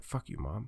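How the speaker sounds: muttered under the breath, very quiet and low. Recalling talking back to mom as a child: mumbled under the breath. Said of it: "I would mumble it under my breath".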